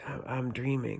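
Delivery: put-on sleepy voice. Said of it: "in that kind of voice, 'cause I was sleeping".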